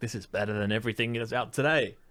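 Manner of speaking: normal talking voice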